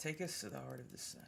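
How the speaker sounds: very soft, close, hushed whisper. In a role-play game, a player's character leans into someone's ear; whispering into an ear. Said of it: "lean into Copernicus's ear and whisper".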